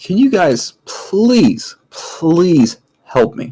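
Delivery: stressed, exasperated, at wits' end, pleading. A narrator voices a character approaching the players for help, stressed and annoyed. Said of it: "he's just beyond stressed or annoyed".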